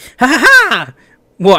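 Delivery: high-pitched put-on voice. Speaker switches to a voice meant to upset everyone: high-pitched put-on voice. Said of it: "I'll do high pitched".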